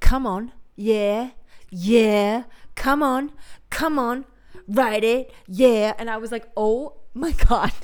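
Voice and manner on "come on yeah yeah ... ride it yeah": fake, hard, tough American gangster accent. Retelling what a man said during sex, in a put-on hard American accent. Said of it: "like this hard accent that I think he was trying to sound like American".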